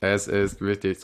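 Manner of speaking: low, flat, monotone robot-like delivery. Trying out a different voice before reading aloud, flat robot-like voice. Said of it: "so ein bisschen roboterartig".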